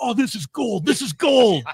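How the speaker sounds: put-on very high New York guy accent. Retelling what the tape editor said about the tape: imitating Rob's New York accent. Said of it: "New York accent".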